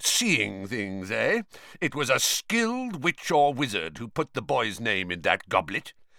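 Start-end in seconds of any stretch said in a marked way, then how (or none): none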